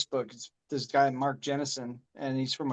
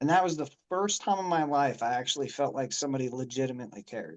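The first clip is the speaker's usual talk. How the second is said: usual speaking voice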